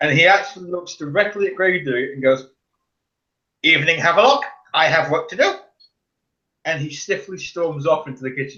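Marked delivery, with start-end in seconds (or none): 3.6-5.5 loud, plump, aristocratic fat nobleman voice. Voicing a possessed figure addressing Gravedigger: fat nobleman voice. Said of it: "it sounds more like a fat nobleman".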